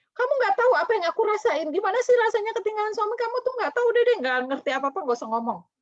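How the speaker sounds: very high, fast, loud, angry rant full of grief. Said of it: "dia ngomel-ngomel".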